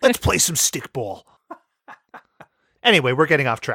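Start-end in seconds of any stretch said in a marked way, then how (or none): 0.0-1.2 put-on smoker voice, higher pitch. Podcast hosts recall how Casey talked in the episode: Casey voice, like a smoker. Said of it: "She talked like this".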